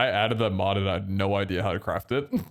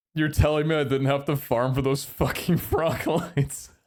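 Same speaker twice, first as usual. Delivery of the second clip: mild half-yelled outburst; 4 semitones higher than usual. Retelling how another player reacted to frog lights in the shop: imitating Peter yelling. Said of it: "Peter just yells out".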